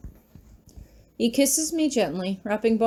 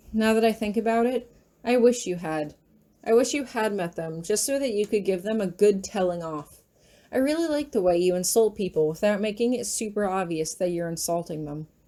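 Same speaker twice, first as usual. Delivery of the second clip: plain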